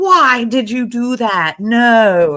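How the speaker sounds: acted, very slow, high, loud scream, stretched no. Retelling a reaction to a partner giving things away: imitating own screaming. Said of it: "I'm screaming".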